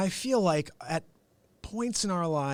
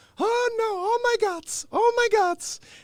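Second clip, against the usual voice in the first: very high-pitched, very slow, drawn-out grandma voice; 7 dB louder than usual. Retelling how grandma reacted to the number thirteen: imitating grandma's super high voice. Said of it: "she had this super high pitched voice and she'd be like".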